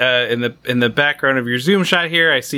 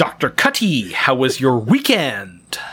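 put-on character voice with swooping pitch. Joking about watching House, doing a Doctor House impression. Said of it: "That's my Doctor House impression".

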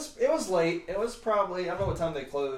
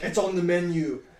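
mock curt, aggressive tone, louder; 4 dB louder than usual. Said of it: "really aggressively".

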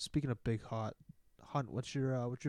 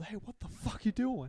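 put-on loud hollering in a Jersey accent; 9 semitones higher than usual. Retelling how someone's parents caught the cousins mooning, retelling a yell in jersey accent. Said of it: "that Jersey accent".

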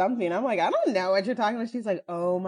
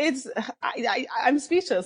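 slow, pitched-up, stumbling, tongue-tied stutter, disbelieving; 5 semitones higher than usual. Reacting to a dance seen online, stuttering in disbelief. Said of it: "I'm stuttering 'cause I don't even know".

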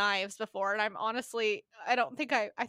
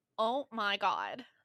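put-on valley girl voice, much slower; 3 dB quieter than usual. Explaining how a Valley Girl talks, doing a Valley Girl impression. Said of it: "the Valley Girl's more like".

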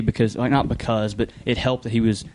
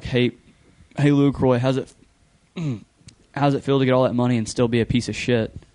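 plain

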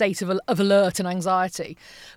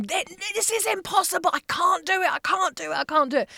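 frenzied, frantic, very high-pitched screaming; 10 semitones higher than usual. Retelling a breakdown over forms at the computer, imitating her own screaming. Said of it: "screaming at the computer screen and going".

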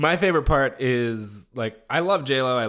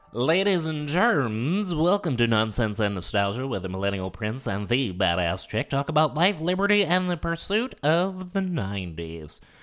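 put-on show announcer voice. Opening the show to listeners, a host speaks in an announcer voice. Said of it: "It sounds like we got a new, voice announcer".

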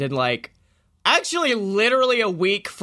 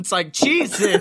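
usual speaking voice

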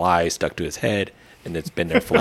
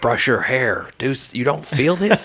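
imitated yell, higher pitch; 7 semitones higher than usual. Retelling watching the fly land on his head: retelling yelling at the screen. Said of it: "I'm yelling at him like".

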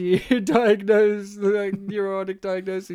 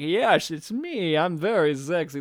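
put-on drawn-out smooth American accent; 3 semitones lower than usual. Imitating a movie character's put-on voice: suave Cary Grant voice. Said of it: "this quagmire Cary Grant".

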